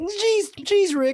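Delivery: very high-pitched cartoon character voice. Showing the hosts a Morty voice being learned: Morty voice. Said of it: "I'm trying to learn Rick and Morty's voice".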